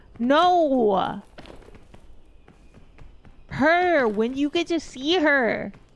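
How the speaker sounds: mock exasperated, insistent anger, slow drawn-out "no". Retelling a father's outburst about a VTuber: imitating Papa Paws angry. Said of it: "So angry".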